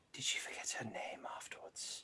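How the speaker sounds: soft, hushed whisper.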